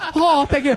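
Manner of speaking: bad put-on Japanese accent. Retelling how a band talked between songs: imitating a Japanese band's stage banter. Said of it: "I literally went".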